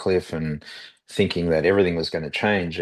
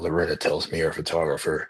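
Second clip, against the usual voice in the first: put-on scratchy, raspy man's voice. Retelling what a man said after being dropped off, imitating a man's raspy voice. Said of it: "in that raspy voice of his".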